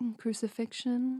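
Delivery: sweet little voice. Retelling the end of a movie in Michael Palin's very sweet voice. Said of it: "Michael Palin's, like, very sweet voice".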